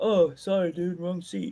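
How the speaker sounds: mock drunk man's voice. Imagining someone in the wrong theater seat, imitating a drunk. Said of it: "the drunk sitting there like".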